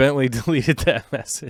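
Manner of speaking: speech broken by laughter mid-sentence. Speaker reacts mid-sentence to a deleted message, laughing while talking. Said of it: "I'm laughing at that".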